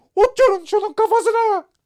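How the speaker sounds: very high, very loud, shrill top-of-the-lungs shriek. Reading the story aloud, the narrator voices the Queen screaming at the top of her voice. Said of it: "Kraliçe avaz avaz".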